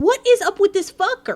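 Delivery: hostile, aggressive, very high-pitched blurted outburst. Reacting to another drowned victim, an aggressive outburst. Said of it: "that's aggressive".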